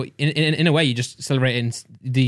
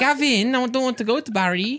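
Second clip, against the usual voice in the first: put-on Welsh accent; 11 semitones higher than usual. Taking turns doing accents, a welsh accent. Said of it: "Do Welsh".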